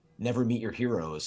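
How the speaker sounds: ordinary talk, nothing marked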